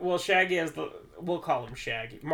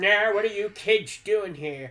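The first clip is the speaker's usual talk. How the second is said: put-on creepy old man voice; 5 semitones higher, 5 dB louder than usual. Retelling a story, the speaker voices a creepy stereotypical old man. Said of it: "the creepy old, like, stereotypical".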